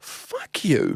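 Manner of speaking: play-acted, hushed, whispered angry outburst. Telling a story about Nate, retelling the moment of getting angry. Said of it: "I start getting angry".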